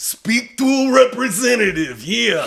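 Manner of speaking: very high voice, pitch pushed way up. Imagining someone with a super iconic voice doing normal stuff, Macho Man Randy Savage impression. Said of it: "anybody with a super iconic voice".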